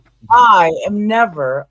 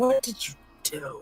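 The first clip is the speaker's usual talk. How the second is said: whispering; 3 semitones higher, 12 dB quieter than usual. Whispering a question to another character in a tabletop game: whisper. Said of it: "I'm gonna whisper to Alistair and say".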